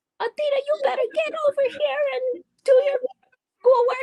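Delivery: put-on very high old-lady grandma voice. Trying to imitate a girl's grandma calling her over, imitating a grandma. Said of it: "I was trying to imitate her grandma".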